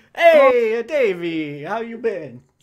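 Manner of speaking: put-on older Italian man voice. Acting out one old partner greeting another, in an old italian family voice. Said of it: "an old Italian family".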